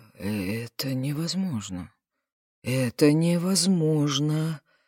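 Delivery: confused, at a loss. Unable to believe his ears, a man repeats himself, bewildered. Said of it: "он растерянно повторил".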